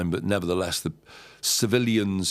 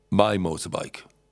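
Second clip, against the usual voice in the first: put-on man's broken English. Retelling a stranger's threat at a table: imitating broken English. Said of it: "And he said".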